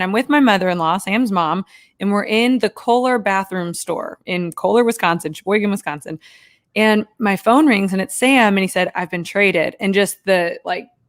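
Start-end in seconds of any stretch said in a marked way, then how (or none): 9.0-9.8 put-on crushed, defeated, deflated, dejected voice. Retelling a partner's phone call about being traded: imitating a deflated voice. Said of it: "the deflatedness in his voice".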